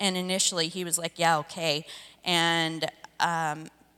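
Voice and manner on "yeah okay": put-on sarcastic "yes", louder. Retelling the husband's reply to joining the marriage group: imitating sarcastic agreement. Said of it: "with a lot of sarcasm".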